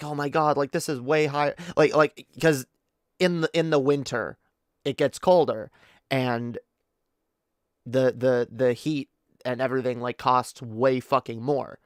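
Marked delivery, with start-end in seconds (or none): 0.0-1.5 put-on mild panic, a little freaked out. Retelling what the grandmother usually says about the bill: imitating someone freaking out a little. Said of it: "freaks out a little and is like".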